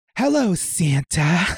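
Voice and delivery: low, sultry, seductive voice. Reading a story role aloud as adult Carol greeting Santa: low, sultry voice. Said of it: "she said in a low, sultry voice".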